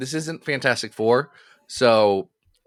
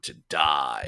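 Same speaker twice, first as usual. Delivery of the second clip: very low, hushed, deep, grandiose villain voice; 12 semitones lower, 6 dB quieter than usual. Responding to talk of Magneto's X-Men, speaker quips in a Magneto voice. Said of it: "too much of Magneto's X-Men".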